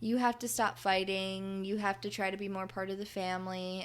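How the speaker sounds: normal talking voice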